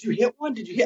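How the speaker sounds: frantic, panicked tone. Recounting texting her after her replies stopped, acting out frantic panic. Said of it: "I started freaking out".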